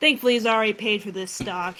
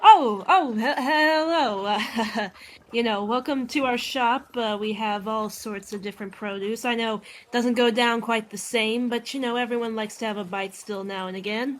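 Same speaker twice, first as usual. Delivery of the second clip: skeletal shopkeeper character voice; 2 semitones higher than usual. Voicing a skeleton shopkeeper welcoming visitors: skeleton shopkeeper voice. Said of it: "the one red pipes up and looks at you and is like".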